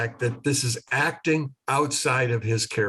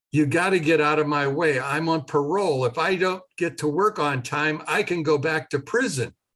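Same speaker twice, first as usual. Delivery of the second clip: mock half-raised, mildly urgent yell; 4 semitones higher than usual. Telling how a man dragged people out of his way, imitating him yelling. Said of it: "And he was yelling at them".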